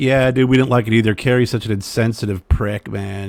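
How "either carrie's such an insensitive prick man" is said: ordinary talk, nothing marked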